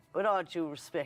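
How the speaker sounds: ordinary talk, nothing marked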